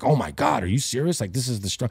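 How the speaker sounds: irritated, fed-up, pissed-off outburst. Retelling how she reacted to the strong herb, acting out being pissed off. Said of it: "her being like pissed off".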